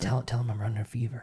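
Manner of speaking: hushed whisper, in the background. Acting out the mom whispering in the background: imitating the mom whispering. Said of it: "you can hear in the background whispering".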